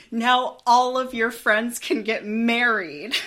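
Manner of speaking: very loud, high, joyful full-lung shout. Retelling a child's reaction to news on a walk: imitating a child shouting joyfully. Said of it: "exclaimed at the top of his lungs".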